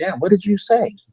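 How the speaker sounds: hushed, quiet stage half-whisper. Retelling half-whispering in the ear of the mama: imitating own half-whisper. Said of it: "I'm whispering in the ear of the mama like".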